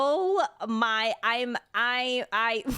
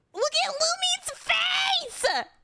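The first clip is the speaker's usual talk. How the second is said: shrill scream mixed with laughter. Reacting to a game scene: screaming while laughing. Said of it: "Why am I screaming?".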